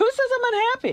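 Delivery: very high, angry voice. Told by others that they seem unhappy, the speaker pushes back, angry. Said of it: "do sound angry".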